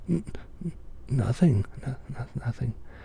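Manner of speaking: awed, frightened stammering. The peasant answers Death's question, stammering in fright. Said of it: "stammered the awed and frightened peasant".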